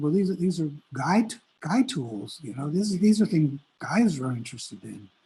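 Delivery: ordinary talk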